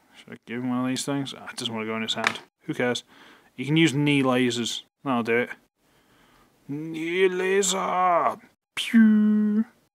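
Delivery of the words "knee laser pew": high, badly dubbed Japanese robot-cartoon delivery. Speaker firing a knee laser, terribly dubbed Japanese robot cartoon voice. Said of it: "really terribly dubbed Japanese robot cartoon".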